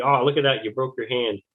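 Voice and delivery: patronizing, condescending, talking-down tone. Retelling a first class with a mustache seeing the broken hand: imitating a condescending tone. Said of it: "he said real condescendingly".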